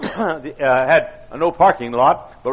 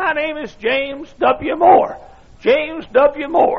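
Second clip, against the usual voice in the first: put-on thin, squeaky, very high old man voice; 13 semitones higher than usual. Retelling meeting a man on the street, the speaker gives James W. Moore's squeaky old voice. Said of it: "In a squeaky old voice".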